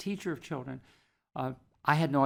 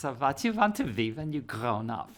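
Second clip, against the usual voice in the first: put-on accent from Budapest. Retell the question she asked after your music reading impressed her, imitating a Budapest accent. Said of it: "I'll imitate her voice because she had a wonderful Budapest accent".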